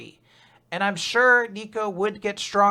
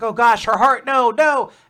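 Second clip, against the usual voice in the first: put-on panicked voice, higher and louder; 3 semitones higher, 5 dB louder than usual. Retelling an anime scene where a character panics: imitating Nico panicking. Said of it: "panicking. He's like".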